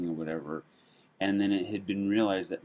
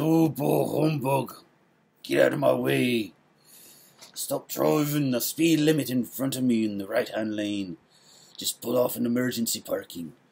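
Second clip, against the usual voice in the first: put-on grumbling Irish accent, raised and pitched up; 6 semitones higher, 6 dB louder than usual. Quoting how everybody acts after Christmas: drifting into an Irish accent. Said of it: "I don't know why I drifted into that accent".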